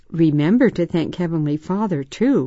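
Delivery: ordinary delivery, nothing marked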